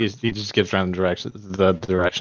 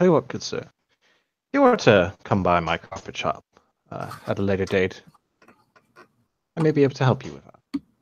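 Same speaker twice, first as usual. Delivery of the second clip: lowered, somewhat hushed, discreet tone. A carpet shop owner speaks so other people don't hear, somewhat quieter tone. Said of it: "he says it in a somewhat quieter tone".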